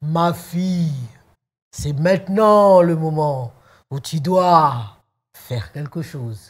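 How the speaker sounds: booming, resounding voice. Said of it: "avec une grosse voix".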